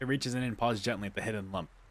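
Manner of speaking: ordinary delivery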